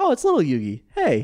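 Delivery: bright, loud, happy voice. Retelling how Pegasus greets little Yugi: imitating Pegasus, happy. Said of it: "he's kinda happy about it too".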